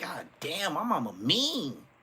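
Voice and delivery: tearful, crying grumble, high and swooping. Retelling complaining as a kid with tears in his eyes: imitating himself teary-eyed. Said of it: "Even if I had tears in my eyes".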